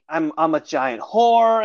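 put-on wallowing, self-pitying tone. Recapping a woman's story, how she sinks into self-pity; imitating self-pity. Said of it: "And she's just in the self-pity".

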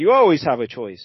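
usual speaking voice

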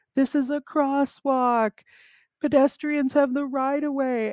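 put-on very high, shrill, angry scolding yell. Retelling a man at a crosswalk laying into him after he braked, imitating someone yelling. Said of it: "just yelling at me".

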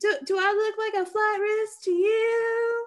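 very high put-on Southern drawl, "you" stretched. Playing a defendant pleading with a judge, in a Southern accent. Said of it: "I don't know why I suddenly have a Southern accent".

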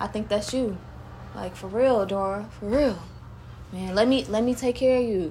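put-on man's voice. Retelling what a guy said to her, imitating a guy's voice. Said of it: "he was talking like this".

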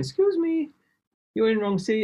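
put-on genteel, little, high Japanese accent. Retelling someone interrupting the speaker an hour into a flight, genteel little Japanese voice. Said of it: "this really genteel little Japanese voice going".

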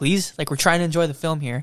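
loud, firm, insistent tone. Retelling an older gentleman asking someone to turn off a phone: imitating a loud, firm request. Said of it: "he was loud. He was firm".

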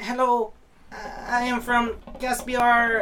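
put-on European accent. Retelling a comedian's stand-up bit as he greets the crowd, Foreign Man-style European accent. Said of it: "doing like this European fob just voice".

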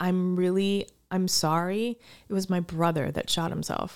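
choked-up voice, near tears. Retelling what the listing agent said when apologizing: imitating someone near tears. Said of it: "sounded like he was almost about to cry".

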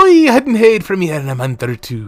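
loud put-on Scottish accent. Repeating the leprechaun's line after a listener can't place the accent, scottish accent. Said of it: "how you sound Scottish".

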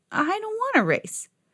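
timid, shy, very high-pitched voice. Narrator reading Trevor's reply to Pig's challenge, shy. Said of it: "Trevor said shyly".

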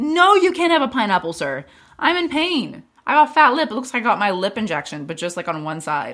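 high, loud, mock-indignant whiny tone.

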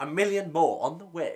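put-on kind-of British accent, loosely done. Describing how the Kaminoans sound, the speaker mimics them in a kind of British accent. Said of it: "They're like kind of British".

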